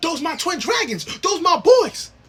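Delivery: hyped-up, bragging, cheering scream. Retelling sitting in the stands representing them: retelling own scream. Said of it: "I'm screaming".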